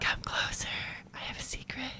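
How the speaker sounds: put-on soft little whispered baby voice, hushed. Quoting a TikTok of a whispering baby: imitating a whispering baby. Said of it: "the whispering baby".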